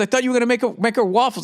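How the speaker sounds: high, rushed, panicky, words tumbling out. Retelling what the wife said about waffles: imitating wife's panic. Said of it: "this fucking panic".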